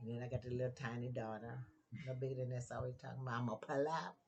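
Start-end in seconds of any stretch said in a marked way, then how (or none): 3.4-4.1 acted-out sassy tone full of attitude. Retelling what a little daughter always says: imitating a daughter's attitude. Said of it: "She got much attitude".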